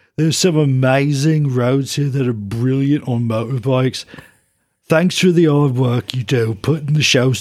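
put-on Birmingham-accented rock star voice. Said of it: "I'm gonna read it like [name]-, [name]".

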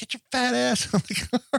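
acted, shrill, high-pitched shouting. Recapping a getaway scene, the speaker quotes Sonny yelling at Graff: imitating Sonny yelling. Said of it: "like yelling at him".

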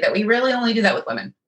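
sarcastic, tongue-in-cheek tone. A woman comments to her listener, sarcastic. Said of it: "she said sarcastically".

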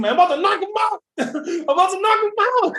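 play-acted very high, rising scream. Retelling a game moment, calling out to the team: imitating own screaming. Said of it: "I was screaming to my team".

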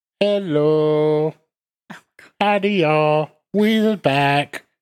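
put-on babyish, slow, drawn-out, high baby voice. Opening a true crime podcast episode, the host greets listeners in a baby voice. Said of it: "you had to sound like an infant".

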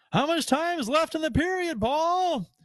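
loud, very high hollered call-out. Telling a story from a game, the speaker imitates a fan calling out loudly to the announcer. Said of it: "I heard him say real loud".

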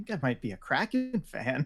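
put-on small, surprised, distressed voice. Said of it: "says in this small, slightly surprised and distressed voice".

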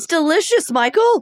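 strained, tight, tense, high voice. In a conversation with Michael, high, tense voice. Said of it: "My voice just got so high and tense".

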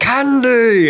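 put-on booming warrior shout. Retelling someone throwing candy into a crowd: yelling in Reinhardt voice. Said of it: "So he started yelling, uh, in his Reinhardt voice".

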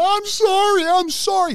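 very high, very slow, drawn-out scream. Retelling an arrest where the suspect begged: imitating someone screaming. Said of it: "He's screaming".

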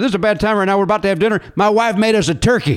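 bad, horrible, fake Southern accent. Retelling how he answered a robocall last night: horrible Southern accent. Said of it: "I always put on a horrible Southern accent".

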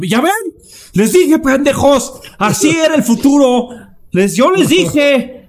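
acted gloating yell, very high, shrill, triumphant. Acting out a man yelling from his parents' house, imitating a triumphant shout. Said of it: "está diciendo".

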